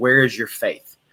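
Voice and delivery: put-on mock-angry tone. Retelling the storm story, voicing the rebuke to the disciples: mock-angry rebuke. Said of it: "very angrily says".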